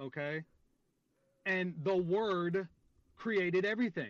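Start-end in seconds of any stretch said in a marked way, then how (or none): 1.5-4.1 slow deliberate spelled-out delivery. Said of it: "I need to say this slow for you".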